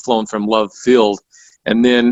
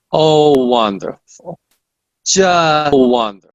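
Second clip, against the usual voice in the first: put-on pitched-up, high Russian accent; 6 semitones higher than usual. A JFK researcher recalls first calling her: Marina Oswald's Russian accent. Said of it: "this Russian accent".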